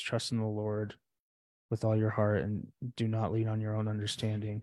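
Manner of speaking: normal talking voice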